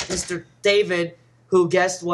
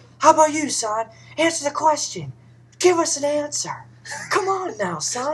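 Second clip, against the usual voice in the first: put-on drunk-guy-like voice, higher; 8 semitones higher than usual. Retelling own words to a kid during skits: Harry Caray voice. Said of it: "I was very Harry Carey today".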